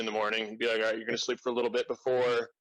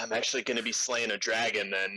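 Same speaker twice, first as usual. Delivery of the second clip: ordinary delivery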